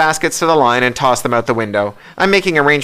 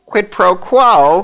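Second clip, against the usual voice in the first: wavering, puzzled, bemused voice, pitched up; 8 semitones higher, 4 dB louder than usual. Narrator reads the bishop answering Hugh and Bonnie, quavering, bemused voice. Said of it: "its quavering voice bemused now".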